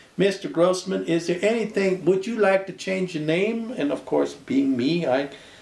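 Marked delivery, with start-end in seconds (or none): 0.2-3.8 thick, heavy Southern drawl, pitched up. Retelling what the judge asked at the citizenship hearing: imitating a heavy Southern accent. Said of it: "he had such a heavy Southern accent".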